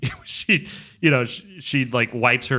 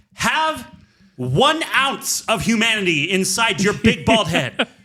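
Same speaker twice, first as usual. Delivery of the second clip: mock viscerally angry outburst, very high-pitched; 9 semitones higher, 3 dB louder than usual. Recounting a reaction to an actor's line delivery in a movie, retelling an angry outburst. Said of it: "I was so viscerally angry".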